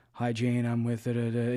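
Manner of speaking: dull, flat, unvaried monotone voice. Giving cold-call advice, showing how not to sound on a call: flat monotone. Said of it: "You don't want to sound monotone".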